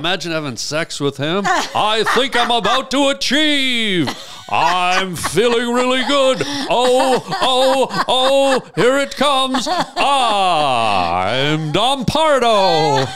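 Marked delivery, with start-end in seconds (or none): 1.4-13.0 very high, very slow, stretched-out drawl. Joking about Don Pardo's voice during sex: imitating Don Pardo. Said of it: "He always talked like that?".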